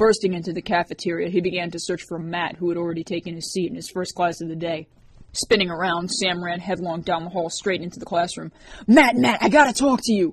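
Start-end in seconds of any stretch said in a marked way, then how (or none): 8.9-10.3 high, loud scream. A boy bursts into a classroom to grab his friend: screaming. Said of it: "he screamed".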